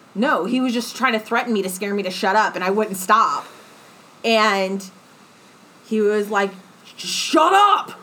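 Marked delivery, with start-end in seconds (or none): 7.0-7.9 very high, shrill, furious angry shout. Speaker retelling how a man told them to shut up, retelling an angry shout. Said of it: "I was getting it angry".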